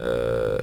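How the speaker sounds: low, groaning zombie voice. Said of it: "I put on my zombie voice".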